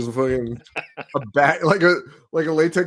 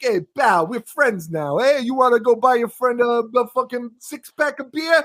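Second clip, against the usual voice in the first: thick put-on Brooklyn accent, pitched up; 9 semitones higher than usual. Speaker retells a guy asking someone to buy beer: imitating thick Brooklyn accent. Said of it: "the thickest Brooklyn accent I have ever heard".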